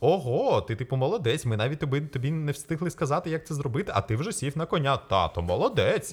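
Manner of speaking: high, swooping, gushing, over-impressed tone. A dad retelling how his kids praised him after he got on the horse, mock-praising. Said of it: "І вони прямо таким голосом зі мною розмовляють, ніби я щось геніальне зробив".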